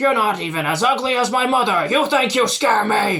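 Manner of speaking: very loud, high, far-carrying battle yell. Voicing Oak Creek taunting a foe mid-battle: Oak Creek yelling. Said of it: "You'd hear Oak Creek yell out".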